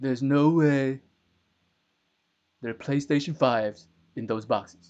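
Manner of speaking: very loud, booming, belted-out delivery. Joking about a conspiracy theory, trying a best Donald Trump impression. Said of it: "I'm trying to do my best Trump impression".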